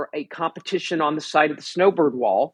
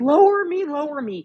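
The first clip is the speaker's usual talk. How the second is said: very high, crying, pleading scream; 11 semitones higher than usual. Retelling a close friend's fall on the rope, imitating her screaming. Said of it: "She was screaming".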